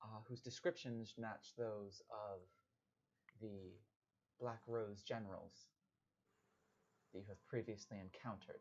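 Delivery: quiet, soft, hushed whisper. In a tabletop game, a character turns toward the whole group and speaks: quiet whisper. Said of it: "in like a quiet uh, whisper".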